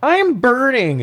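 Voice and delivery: very high, squeaky, dumb-sounding dopey voice. Retelling a film's badly delivered line: Ralph Wiggum voice. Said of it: "like she's fucking Ralph Wiggum".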